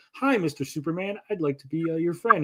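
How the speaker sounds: put-on polite voice. Imitating the same character being polite in Superman: imitating John Cena being polite. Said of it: "he's like".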